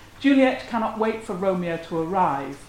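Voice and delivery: ordinary talk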